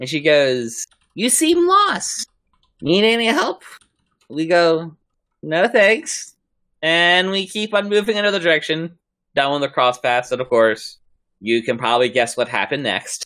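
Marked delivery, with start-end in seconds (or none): 1.1-3.6 put-on very high, elderly woman's voice. Retelling a voice echoing through the woods at a crossroads; old lady voice. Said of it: "what sounding like an old lady".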